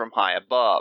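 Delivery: ordinary delivery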